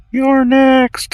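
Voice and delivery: put-on teeny little girl voice, very high pitched. During an intimidation check, a player speaks in character in the tiniest little girl voice. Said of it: "Tiniest little girl voice".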